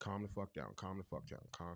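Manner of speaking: upset, frustrated muttering to oneself. Retelling what was said to oneself in a moment of anger: retelling angry self-talk. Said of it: "I do talk to myself like that sometimes".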